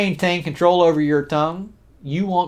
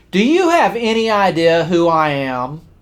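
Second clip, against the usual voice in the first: loud, booming, drawn-out voice; 4 dB louder than usual. Retelling the unhappy passenger's outburst at the counter: imitating a loud voice. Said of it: "in a loud voice, so that everybody around him could hear".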